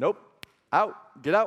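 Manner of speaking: slow, sharp, snapping mock teacher voice. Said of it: "she snapped at me".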